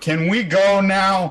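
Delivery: very loud, shouted call. Voicing a character calling from the back of the group: very loud call. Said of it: "very loudly from the back of the group".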